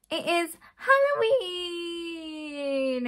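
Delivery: strange, odd-sounding, weird high voice, drawn out. Announcing to viewers that today is halloween: voice going really weird. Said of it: "my voice went really weird".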